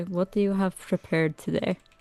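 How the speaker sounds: quietly muttered under the breath, hushed. Speaking in character while leaning over to Lady Wachter: quietly under the breath. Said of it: "under their breath, like, really quiet".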